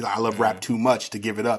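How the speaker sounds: normal talking voice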